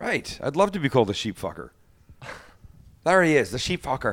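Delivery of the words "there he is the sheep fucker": put-on Welsh accent that comes out sounding Irish. A speaker tries a line on a friend in a Welsh accent that comes out Irish. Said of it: "that's not a Welsh accent".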